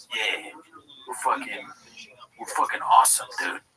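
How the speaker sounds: play-acted, earnest, dead-serious deadpan. Mocking the guy whose face they're looking at, acting out his mock-serious tone. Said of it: "All serious".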